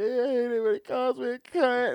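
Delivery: acted, very high, weepy, crying complaining voice. Imitating a mom who cries after being insulted: imitating someone crying. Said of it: "his mom would cry for two hours".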